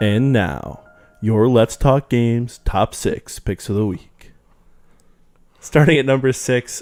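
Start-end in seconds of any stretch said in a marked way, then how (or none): 0.0-4.3 deliberate, very slow announcer voice. Introducing the show's weekly top six picks: announcer voice. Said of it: "That was the announcer voice".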